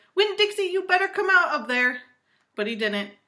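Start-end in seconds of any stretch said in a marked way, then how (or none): 0.2-2.0 high, loud hollered call. Narrator calling a dog out from behind a gate, hollering. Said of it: "went up to the gate and hollered".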